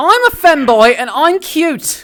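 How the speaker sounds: terrible put-on British accent, very high pitch. Joining in when someone asks for some terrible british: terrible british accent. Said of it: "You guys ready for some terrible British?".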